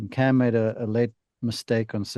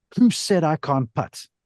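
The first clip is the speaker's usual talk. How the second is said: pointed, pitched-up delivery; 5 semitones higher than usual. Speaker retells a player's remark while walking past after sinking the putt, retelling a loud remark. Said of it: "in a loud voice".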